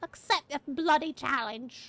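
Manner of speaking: put-on, fake British accent. Reading a character's line with the word bloody: put-on British accent. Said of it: "I feel like they need to be British".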